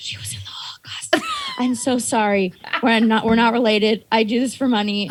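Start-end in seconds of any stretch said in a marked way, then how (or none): 0.0-2.5 hushed, under-the-breath whispered aside. Retelling following behind someone and apologizing to a shop worker: imitating own past whisper.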